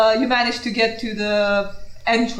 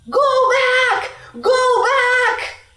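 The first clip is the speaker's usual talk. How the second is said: very high-pitched, very slow, drawn-out scream; 14 semitones higher, 4 dB louder than usual. A narrator voices someone running toward the listeners, screaming. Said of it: "He's screaming".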